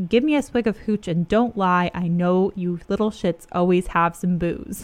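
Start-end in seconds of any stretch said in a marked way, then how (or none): none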